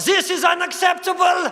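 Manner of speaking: put-on high, loud shout in a German accent. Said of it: "The accent was a bit much".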